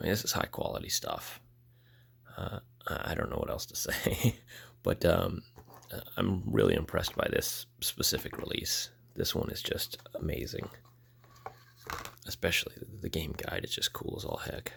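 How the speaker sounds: sickly voice, partly whispered.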